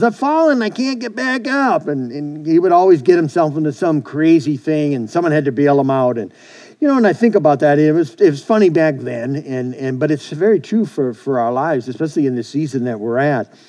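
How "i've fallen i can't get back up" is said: obnoxious, much higher-pitched nerdy squeaking voice. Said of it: "another one was".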